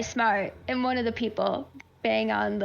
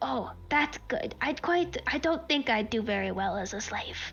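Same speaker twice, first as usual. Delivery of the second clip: voice lowered even more, much quieter; 5 dB quieter than usual. A game master voices a character replying to her, voice lowered even more. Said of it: "He will lower his voice even more".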